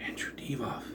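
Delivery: soft, disbelieving whisper. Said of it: "I was like".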